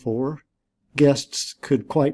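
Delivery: ordinary delivery, nothing marked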